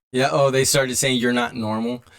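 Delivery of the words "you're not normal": plain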